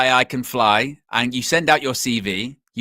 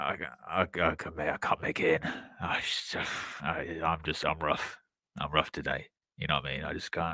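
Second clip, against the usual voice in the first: faked sick voice, much lower and quieter; 9 semitones lower, 14 dB quieter than usual. Re-enacting how they did it on the phone, in a fake sick voice. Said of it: "Did the sick voice on the phone".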